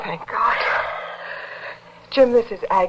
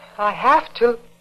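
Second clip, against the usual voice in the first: raised, higher-register, pitched-up voice; 3 semitones higher than usual. Trying the line again after being told: higher-pitched voice. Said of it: "Pitch your voice higher".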